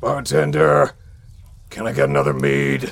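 very low, loud, booming barbarian-style bellow. In a tabletop game, the player as the half-orc barbarian calls the bartender: Corwin half-orc barbarian voice. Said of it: "Well, today you will be crossing paths with the champion of the Craghammer Brawling Circuit, the Defenestrator, the man whose philosophy is fight, [name] Corwin, the Half-Orc Barbarian".

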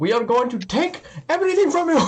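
furious shouting, very high, rising pitch. Speaker acts out a person in a video yelling at an old man, imitating someone yelling. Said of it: "why are you yelling at this supposed old man".

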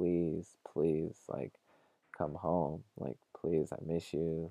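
put-on pleading whisper. Retelling how the mom pleaded with her in a whisper: retelling a whispered plea. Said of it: "the mom's pleading with her".

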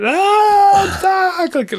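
very high, loud, panicked screaming, long drawn-out ah. Retelling how the kids stuck in their seatbelts reacted, imitating kids screaming. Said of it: "And they just started screaming".

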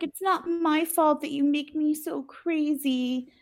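play-acted sweet, innocent, sexy tone, high, very drawn out. Retelling a character crawling across the bed, imitating sweet, sexy Jody. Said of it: "sweet, sexy, innocent Jody".

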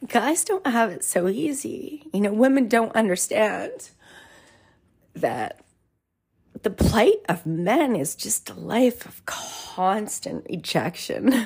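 voice welling up, near tears. Speaker opening up to listeners, tearing up. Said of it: "I'm tearing up".

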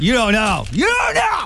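stern, angry scolding shout, high and rising. Complaining that kids these days never get bored, in a mock-angry dad voice. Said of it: "that's exactly what my dad voice is when I'm mad at my kids".

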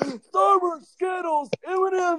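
put-on granny voice, very high and loud. Retelling saying candy names to an opponent mid-game, in an old grandma voice. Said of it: "in an old grandma voice going".

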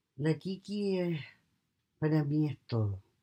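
choked up, voice breaking with emotion. Answering a question about her dog, choked up with emotion. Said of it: "no puedo hablar mucho porque me emociono".

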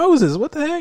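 excited, very high exclamation. Retelling a movie scene where Ramses greets Moses: imitating excited Ramses. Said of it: "he's really excited when he comes back".

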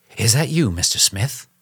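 whispering. The sick Holmes, shaken by the shoulder, greets his visitor, whispering. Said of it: "Holmes whispered".

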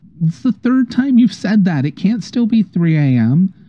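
much smaller, very high voice. Voicing a small voice answering the shouting woman: much smaller voice. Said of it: "a much smaller voice just go".

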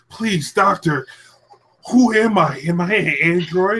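drawn-out begging plea. Retelling a game scene where the character begs the doctor: imitating Shadow pleading. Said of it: "Shadow was talking to, like, Eggman".

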